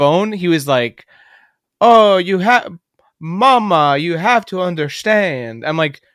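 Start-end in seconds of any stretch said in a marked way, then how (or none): 1.8-5.6 put-on changed accent, high, slow, Mama drawn out long. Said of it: "your accent changed".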